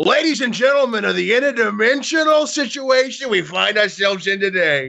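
loud yell. Narrating a scene, the speaker voices a man stepping from a doorway, yelling. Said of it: "who yells".

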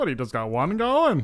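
put-on Long Island accent. Retelling what a man asked the guys, in a real Long Island accent. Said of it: "He's like real Long Island".

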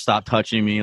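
ordinary delivery

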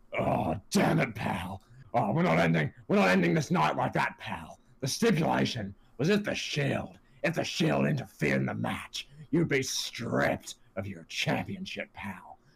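rough, creaky, rasping voice. Retelling Vince coming out to restart the match: Vince McMahon impression. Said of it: "Vince comes out and goes".

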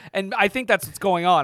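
ordinary delivery

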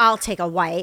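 play-acted snippy, pissy, put-out tone, loud. Retelling what a passenger next to them said: imitating a pissy tone. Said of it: "she was really, like, being pissy".

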